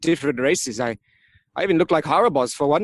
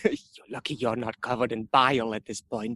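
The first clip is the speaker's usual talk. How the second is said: hushed, low half-whisper; 4 semitones lower, 6 dB quieter than usual. Playing a character half-whispering back to someone who half-whispered first: half-whispered retort. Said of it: "I whisper back".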